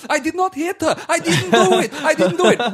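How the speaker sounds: very high, very loud furious angry yell. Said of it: "he goes up to the roof on his own and he's all angry".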